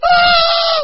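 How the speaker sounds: terrified screaming, very high and very loud.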